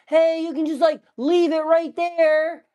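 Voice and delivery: very high hollered shout, put on. Retelling a delivery where the man started yelling: imitating a man yelling. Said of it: "he started yelling, being like".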